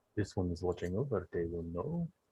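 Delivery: hushed, quiet, low-key delivery. Playing a character waking at a bedside, saying the line quietly. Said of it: "I say it quietly".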